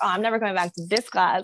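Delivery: ordinary delivery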